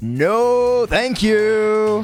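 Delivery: lilting, sing-songy, up-and-down pitch. Showing how they'd have preferred him to say it: sing-songy up and down. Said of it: "more sing-songy, ... like an up and down sort of thing".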